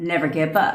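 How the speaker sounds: plain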